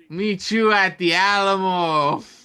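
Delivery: slow, high-pitched yelled call.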